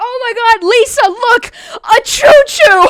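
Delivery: put-on panicked exclamation. Retelling how a driver suddenly exclaimed to a passenger: mock-alarmed shout. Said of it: "as if he's gonna crash the car".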